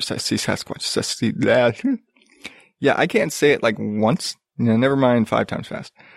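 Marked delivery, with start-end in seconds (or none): 0.0-1.3 soft muttering under breath. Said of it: "That's a tongue twister".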